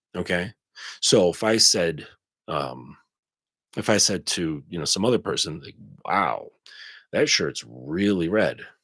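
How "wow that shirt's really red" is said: snide, insinuating passive-aggressive tone under sweetness. Example remark to another person, showing tone: passive-aggressive implying tone. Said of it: "my passive aggressive tone, my implying tone".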